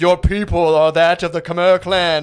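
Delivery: put-on voice from the sky. Imitating a dad on a podcast: imitating the sky from The Lion King. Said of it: "the guy sounds like the sky from the Lion King".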